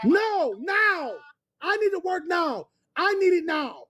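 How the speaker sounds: worked-up, agitated, insistent, demanding tone. Caller phoning a hospital insists on getting a job, agitated and demanding. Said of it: "calm down, sir".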